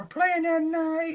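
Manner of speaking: very high, squeaky put-on character voice. Answering a viewer's question by doing an Uncle Lou impression. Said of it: "This is my best Uncle Lou impression".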